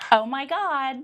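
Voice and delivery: put-on Southern California Valley Girl accent. Asked in a rapid-fire interview to answer in a valley girl voice. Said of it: "what does a Valley Girl sound like?".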